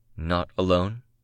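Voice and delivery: ordinary talk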